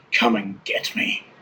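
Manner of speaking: rasping, raspy, whispery voice. Retelling what a female creature said after turning you to face her, really raspy, whispery voice. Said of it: "like in this really raspy, whispery voice".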